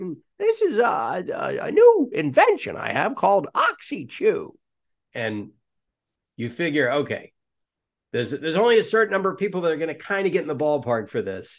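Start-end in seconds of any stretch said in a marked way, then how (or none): 0.0-4.5 high cartoon inventor voice, pitch pushed way up. Speaker demonstrating a character voice he does, in the high Gyro voice. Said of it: "he gets way up there".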